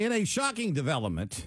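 dripping, heavy, knowing, obvious sarcasm. Introducing the next sports news item in a sarcastic tone. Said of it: "I say that very sarcastically if you couldn't understand the tone".

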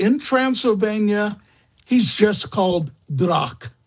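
normal talking voice

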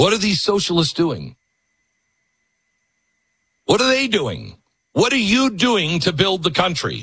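loud, high shouting. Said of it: "I gotta yell at somebody".

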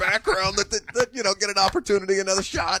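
high mock indignation.

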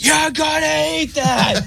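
mock very high, slow, rough, drawn-out scream. Retelling a mother leaning into her child: imitating a mother screaming. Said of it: "that mom leaned up into him".

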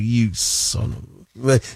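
very slow, under-the-breath whispered mutter. Acting out the same man cursing: imitating muttering under breath. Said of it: "doing it under his breath".

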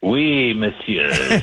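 put-on phony French accent. Greeting an arrival, a character answers in a fake French accent. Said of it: "They don't talk like that in Galpolis".

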